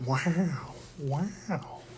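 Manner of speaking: wow said very quietly and softly. Doing a practiced impression on request: Owen Wilson impression. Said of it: "do your Owen Wilson".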